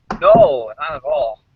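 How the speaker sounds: strongly sarcastic, mocking tone. On a call, asked whether they are driving right now; sarcastic. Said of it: "that sounded very sarcastic".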